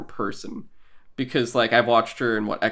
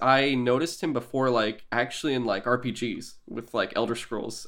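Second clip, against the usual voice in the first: normal talking voice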